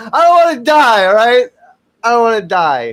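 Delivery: shrill, very high, drawn-out scream. Talking about hoping not to simply cease to exist: screaming. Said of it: "I'm screaming".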